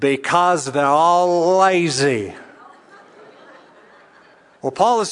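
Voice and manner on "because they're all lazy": loud, slow, stretched-out Texas drawl. Retelling an interview answer from Doctor McGee: J. Vernon McGee Texas drawl. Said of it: "the classic J. Vernon McGee, uh, Texas drawl".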